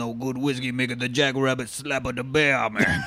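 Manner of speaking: thick, heavy Cajun accent. Acting out a backwoods moonshiner for a co-speaker, do a Wilford Brimley voice with a thick Cajun accent. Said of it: "with this thick-ass Cajun accent".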